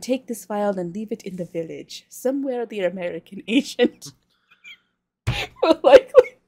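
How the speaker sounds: giggling through words while talking. Reading out a villain's lines while trying to do a voice, laughing while talking. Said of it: "I gotta stop laughing".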